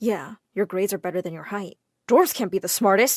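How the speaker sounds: plain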